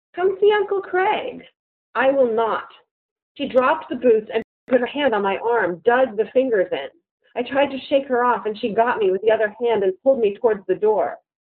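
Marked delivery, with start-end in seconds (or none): 0.2-1.4 sly, coaxing, inviting, very high voice. A woman blocking the narrator's way says it again, in a sly, inviting voice. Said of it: "said again in such a sly, inviting voice".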